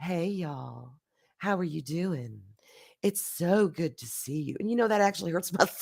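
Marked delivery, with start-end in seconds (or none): 0.0-4.6 put-on deep, soft, sultry come-hither voice. Greeting everyone on a Friday, in a deep sultry voice. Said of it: "use the deep sultry voice".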